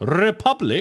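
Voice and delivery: loud delivery. Reading capitalised words of a list name on request: saying it loudly. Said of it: "could you just, like, say it loudly?".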